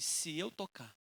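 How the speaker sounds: hushed, low, soft, hopeful murmured whisper. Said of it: "E ela falou assim".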